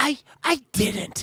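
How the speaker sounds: sincere, earnest, high little voice. Imitating how a co-host sounds, earnest Eric tone. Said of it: "what I call earnest Eric".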